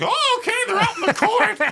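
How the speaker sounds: very high-pitched, strange announcer voice. Show how a man whose voice your mom and dad hate sounds now, imitating a weird high-pitched voice. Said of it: "high pitched weird voices".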